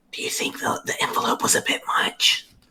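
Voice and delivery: very soft, quiet, hushed whisper. Voicing a character asking two companions something out of another's hearing: quiet whisper. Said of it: "very quietly whispers to where Kateb can't hear".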